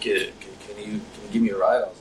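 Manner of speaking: plain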